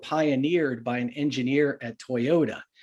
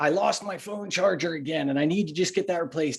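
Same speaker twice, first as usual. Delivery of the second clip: put-on gawky, awkward teenage voice; 4 semitones higher than usual. Illustrating an employee's excuses for being late, Napoleon Dynamite voice. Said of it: "I have to do my Napoleon Dynamite voice".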